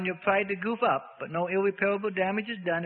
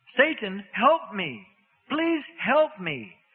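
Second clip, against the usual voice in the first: anguished, writhing, shrieking demon cry; 4 semitones higher, 4 dB louder than usual. Held on the floor by eight men, the demon shrieking. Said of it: "The demon shrieked".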